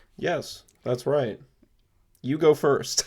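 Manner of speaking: robotic, mechanical voice like a machine talking. Telling the other speaker to go first, sounding like a robot. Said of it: "why are you sounding such, like, a robot".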